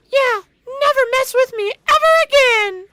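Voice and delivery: very high, very loud squeaking shriek. Retelling how an audiobook narrator voiced Brimmer Dangorst, in a high-pitched voice. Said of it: "they gave him the most high-pitched voices possible".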